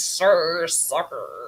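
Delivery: slow, drawn-out, bad mock American accent.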